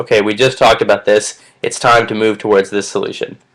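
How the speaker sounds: ordinary delivery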